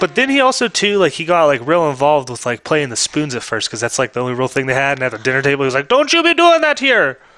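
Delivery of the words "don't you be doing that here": very high, loud put-on Dutch accent. Acting out what he said at the dinner table, in a put-on dutch accent. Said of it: "That's the Dutch accent".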